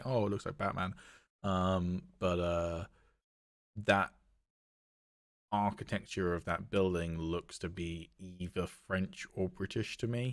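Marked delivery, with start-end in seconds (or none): 0.0-0.9 scornful, derisive, dumb-sounding voice. Discussing a trailer, the speaker quotes what other people say: mocking the stupid people. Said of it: "the stupid people saying".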